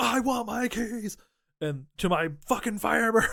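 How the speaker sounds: play-acted wild, demanding meltdown, high and frantic. Retelling a story, the speaker acts out Jeremy Piven freaking out. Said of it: "Jeremy Piven is freaking out".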